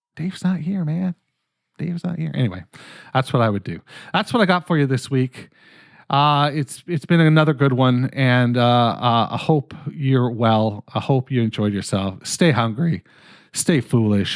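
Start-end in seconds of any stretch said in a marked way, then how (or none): 12.3-14.4 voice breaking. Podcast host signing off the episode, voice cracking. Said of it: "My voice just cracked".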